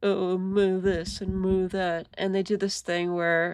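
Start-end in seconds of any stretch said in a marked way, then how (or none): 0.0-2.1 put-on stupid-sounding mocking tone. Describing how people mimic their opponents, the speaker mimics them: put-on stupid-sounding mocking tone. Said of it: "giving them this, like, stupid sounding tone".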